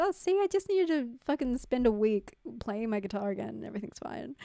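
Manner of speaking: ordinary talk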